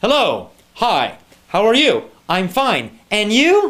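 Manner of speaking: stilted, unnatural, scripted-sounding reading, sing-song. Criticizing textbook conversations, a speaker mimics their stiff, unnatural textbook reading. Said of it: "reading that conversation in a very unnatural way".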